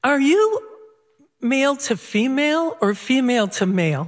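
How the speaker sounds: wholehearted, dead-serious, earnest, sincere. Retelling a question someone asked the speaker, in a mock-earnest voice. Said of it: "In his most earnest voice".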